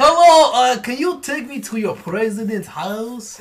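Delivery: put-on Russian accent. Asked to hear the Russian accent again, the speaker does a Borat-style Russian accent. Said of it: "let's hear your Russian accent again".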